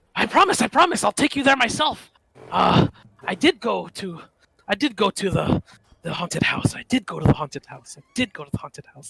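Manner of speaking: high, slightly frightened voice. Narrating a man who looks at you and says he'll take you there, a little frightened. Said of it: "He's a little frightened".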